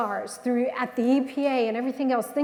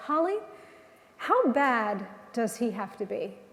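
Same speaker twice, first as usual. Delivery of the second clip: mock even, quiet, unraised voice, gently swooping pitch; 4 dB quieter than usual. Retelling her uncle's answer to her: retelling a calm question. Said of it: "very calmly looked at her, and without raising his voice".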